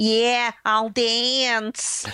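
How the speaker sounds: put-on thick, drawn-out Estonian-New York accent. Recapping a scene, imitating the ballet dancer agreeing to dance: Natasha's thick Estonian-New York accent. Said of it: "She's got a really thick Estonian accent".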